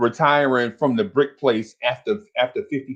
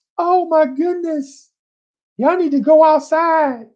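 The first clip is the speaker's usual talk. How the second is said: mock crying, higher; 4 dB louder than usual. Retelling an auntie rushing into the house: imitating a crying auntie. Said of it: "your auntie come in the house crying".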